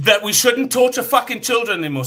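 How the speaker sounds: very high upset outburst. Finally answering a question another speaker keeps pressing for: upset outburst. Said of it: "I got upset with me".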